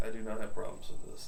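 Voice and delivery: normal talking voice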